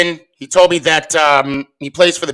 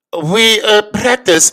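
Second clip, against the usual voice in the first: thick, heavy, put-on German accent; 4 semitones higher than usual. Retelling what a man said when he walked up to the speaker, thick german accent. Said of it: "with a thick German accent".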